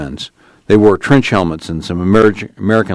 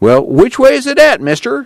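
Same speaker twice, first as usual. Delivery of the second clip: very high, swooping, whiny voice; 3 dB louder than usual. Tom asks an armed man at the truck which way to go, whining. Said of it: "Tom whined".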